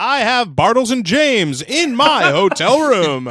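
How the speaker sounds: very loud, very high, slow booming announcer voice. Describing how a voice actor would deliver a line, imitating main announcer voice. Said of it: "he would do it in the main announcer voice".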